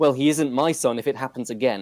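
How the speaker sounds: normal talking voice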